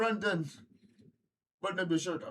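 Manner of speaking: put-on mimicked Jamaican accent. Retelling what a man at a restaurant said to him, in a jamaican accent. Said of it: "I'm doing a Jamaican accent".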